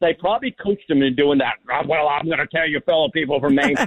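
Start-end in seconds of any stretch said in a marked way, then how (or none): 1.7-3.7 big macho growling voice. Imitating a candidate wooing voters in his Macho Man voice. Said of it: "He wooed them with his Macho Man voice".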